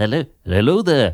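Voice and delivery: mock upper-class voice. Starting an impression of Obi-Wan Kenobi: Obi-Wan Kenobi voice. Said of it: "he's a very posh man".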